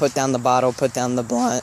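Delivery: voice breaking mid-word. Giving advice about alcohol and weed, voice cracking. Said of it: "excuse me, voice crack".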